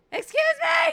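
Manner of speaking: full scream, very high and very loud. Telling of running outside after a man, re-enacting screaming at him. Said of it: "I like screamed like that".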